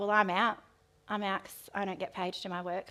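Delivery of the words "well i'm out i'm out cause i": usual speaking voice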